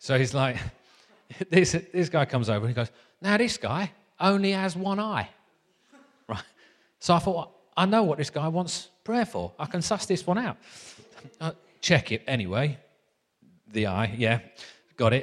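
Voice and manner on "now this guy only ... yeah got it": put-on Essex accent, easy relaxed delivery. Retelling a story Carl told, in Carl's Essex accent. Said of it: "So I'll do the accent again".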